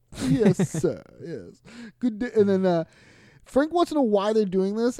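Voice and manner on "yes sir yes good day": upper-class cartoon villain voice, posh. Discussing characters who call each other sir, mimicking them in a Disney villain upper class voice. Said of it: "it's like Disney villain upper class voice".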